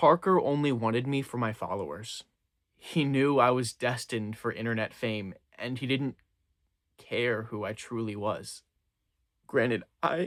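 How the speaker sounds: crying through the words, tearful, cracking voice. A character speaking about a former friend, crying, voice breaking. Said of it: "I can't believe I'm crying about this".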